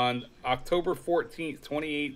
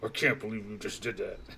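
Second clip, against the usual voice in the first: cranky, deep, soft put-on growl; 4 semitones lower, 6 dB quieter than usual. Voicing what she says back when cranky, put-on deep, growly voice. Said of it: "Almost in that deep, uh, growly voice too".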